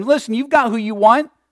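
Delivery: almost pleading, imploring, begging tone. Showing how he once misread a verse, the speaker acts out a pleading tone. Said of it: "almost asking them or begging them".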